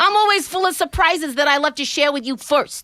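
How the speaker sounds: put-on Bronx accent. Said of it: "Let's try it".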